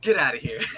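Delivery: brash, loud, belted out into the microphone. Retelling how a wrestler grabbed the announcer's microphone: imitating Mr. Kennedy. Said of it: "He'd take the microphone and be like".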